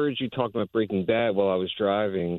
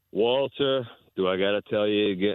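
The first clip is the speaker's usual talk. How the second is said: gravelly monotone character voice. Talking about sound-alike voices on the show, a speaker does a Mike Ehrmantraut impression. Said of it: "[name] has done a pretty good Mike Ehrmantraut".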